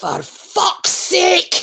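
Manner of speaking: put-on Scottish Highland accent. Retelling a dad losing his temper: imitating dad's croaky deep Highland swearing. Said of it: "he's got this really croaky, deep Highland".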